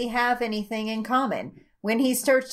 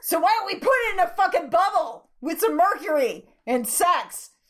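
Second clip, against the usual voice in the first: full-on, high-pitched shouting; 8 semitones higher than usual. Joking about a weird recording time loop with another speaker: yelling. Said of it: "You've gotta stop yelling".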